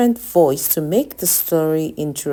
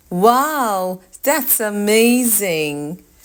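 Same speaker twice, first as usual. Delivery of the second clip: bright, thrilled, high, with a stretched-out wow; 5 semitones higher than usual. Reading-lesson example of a sentence with an exclamation mark, lively and excited. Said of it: "Your voice should sound lively".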